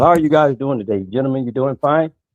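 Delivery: fake, put-on polite corporate tone. Greeting the guys the way he would in his corporate world, fake polite corporate tone. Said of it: "but in my corporate world".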